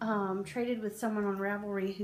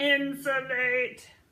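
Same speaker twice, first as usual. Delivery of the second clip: loud, deliberately bad put-on voice; 4 semitones higher, 7 dB louder than usual. Naming a knitted hat project, in a terrible Dalek impression. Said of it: "That's my terrible Dalek impression".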